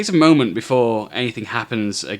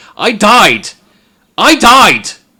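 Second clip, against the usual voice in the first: very high, very loud, shrill terrified cry; 12 semitones higher, 12 dB louder than usual. Narrating for the players, the speaker voices a freaked-out character in a loud terrified voice. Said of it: "proclaims very loudly in a terrified voice".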